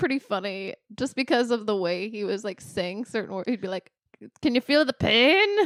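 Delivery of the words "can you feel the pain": exaggerated put-on Irish accent. Recalling a movie villain, the speaker quotes him in O'Grady's over-the-top Irish accent. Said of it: "that Irish accent had me weak".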